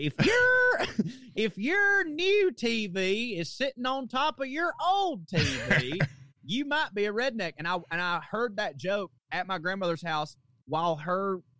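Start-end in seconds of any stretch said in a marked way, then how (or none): 0.0-7.5 slow, high, swooping comic voice, drawn out up and down. Retelling a joke heard on television as a kid: Jeff Foxworthy impression. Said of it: "I'm butchering his voice".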